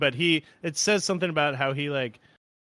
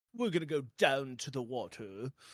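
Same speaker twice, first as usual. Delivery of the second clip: soft, haughty, pompous put-on British accent; 7 dB quieter than usual. Recapping a movie, mimicking a jerk character: Phil Fitzroyce's British accent. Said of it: "That's kind of his accent".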